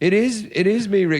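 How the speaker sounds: condescending, patronizing, talking-down voice. The speaker retells greeting rick as if to an old lady: retelling talking down to old lady.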